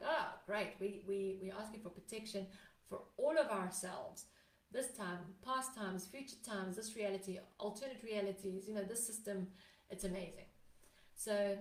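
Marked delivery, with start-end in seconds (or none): none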